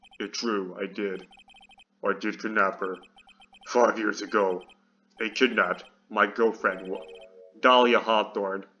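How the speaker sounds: very low, heavy, deep man's voice. Voicing a character in a role-played scene, deep voice. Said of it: "We're giving him this deep voice".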